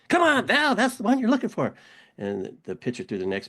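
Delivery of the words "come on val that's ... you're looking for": shrill, loud shouting. Retelling a softball game, the other team's coach yelling at the batter: imitating Rizzo yelling. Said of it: "He's yelling at you".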